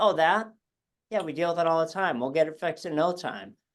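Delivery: acted offhand, casual, breezy, nonchalant tone. Speaker recounting a Boston voice specialist's first reaction, mock-nonchalant specialist. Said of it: "right away nonchalantly goes".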